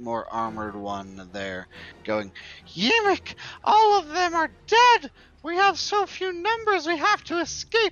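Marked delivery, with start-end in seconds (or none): 2.7-7.9 very high, very loud, shrill pleading goblin voice. Voicing a goblin pleading at the feet of a taller goblin: pleading goblin voice. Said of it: "pleading at the feet of".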